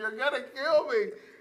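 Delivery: high-pitched screaming cry. Retelling the plea made while getting a whooping: imitating someone screaming. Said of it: "he started screaming".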